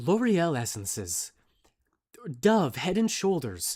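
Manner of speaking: commercial voice-over ad announcer delivery. Showing how to read a shampoo bottle in the shower, reading like an advertisement. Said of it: "you read it like an advertisement and you're like".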